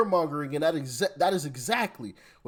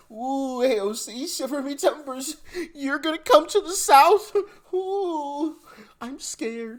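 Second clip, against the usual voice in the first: very high, sarcastic, pretend-scared taunting fake fear; 9 semitones higher than usual. Mocking someone's threat to come to the south, in sarcastic mock fear.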